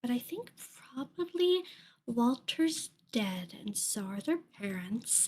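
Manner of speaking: said very quietly, hushed, kept down. Speaking in character so the kids can't hear: said real quietly. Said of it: "I'm gonna say this real quietly so the kids can't hear".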